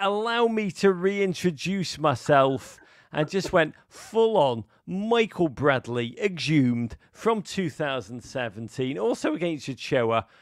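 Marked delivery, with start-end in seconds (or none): 0.0-2.8 light, high-pitched mild half-shout. Retelling what a player shouted after scoring: imitating a player shouting. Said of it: "He just shouted".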